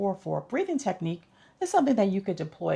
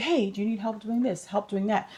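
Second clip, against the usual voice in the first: ordinary talk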